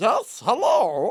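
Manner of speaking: cute, high, little talking-doll voice. Describing a talking toy that answers when greeted: Grogu doll voice. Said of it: "And it's like".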